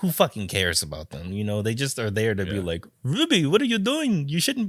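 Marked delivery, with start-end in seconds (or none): 3.0-4.7 very high, unconvincing put-on Scottish accent. Mocking side characters who only exist to scold Ruby, in an attempted Scottish accent. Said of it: "My best Scott impression".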